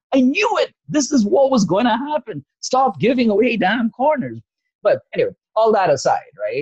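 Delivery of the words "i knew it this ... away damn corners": mock very high-pitched, shrill yelling outburst. Retelling a goal he watched beside his wife, the speaker re-enacts his own yelling. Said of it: "and I'm yelling".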